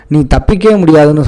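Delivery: ordinary delivery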